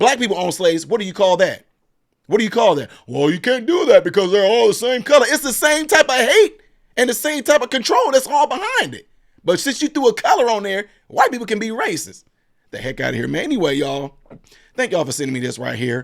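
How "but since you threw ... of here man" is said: strained, raised voice cracking and breaking. Addressing viewers who sent him a video, voice cracking. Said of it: "I'm starting to crack up again".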